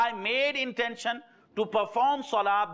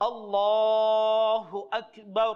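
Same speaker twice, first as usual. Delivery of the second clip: raised voice, words stretched out and elongated. Speaker demonstrating how the imam stretches his voice when starting prayer, stretched-out words. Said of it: "Imam stretches his voice".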